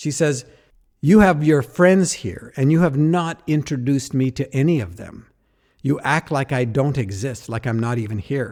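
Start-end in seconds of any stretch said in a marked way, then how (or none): 1.0-8.5 put-on angry outburst tone. Retelling what his sister said when she confronted him: imitating her angry words. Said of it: "she is so angry".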